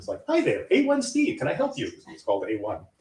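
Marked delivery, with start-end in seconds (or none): 0.3-1.9 put-on very high, sing-song, friendly voice. Retelling how he answered the phone: imitating his own friendly greeting. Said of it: "I was always very friendly".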